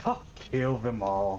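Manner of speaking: utterly sarcastic, dripping with mockery. Showing how a line booming through hell would sound, sarcastic. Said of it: "it'll be like in the most like sarcastic way ever".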